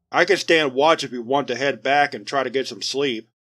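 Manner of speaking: plain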